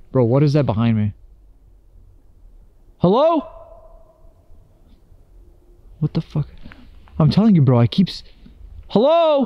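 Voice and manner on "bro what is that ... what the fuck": frightened, losing composure, genuinely scared calling out. Filming in a forest, the speaker hears something behind them, genuinely scared. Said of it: "I'm genuinely scared".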